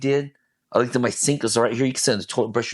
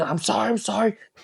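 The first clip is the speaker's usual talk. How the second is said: shouting in an outright scream; 9 semitones higher than usual. Recalling when racing thoughts overwhelmed them, reenacting screaming "I'm sorry". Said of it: "I started screaming".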